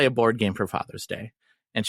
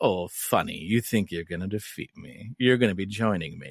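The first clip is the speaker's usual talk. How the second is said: put-on sultry necromancer voice, lower and quieter; 4 semitones lower, 4 dB quieter than usual. Imitating the game's necromancer taunting the player: sultry Mariana voice. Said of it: "she has a very, like, sultry voice".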